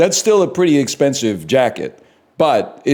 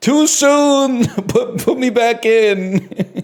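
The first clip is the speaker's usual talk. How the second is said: drawn-out newborn scream, very high, very slow; 11 semitones higher than usual. Picturing a premature baby who wants to go back: imitating a screaming premature baby. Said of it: "a premature baby screaming".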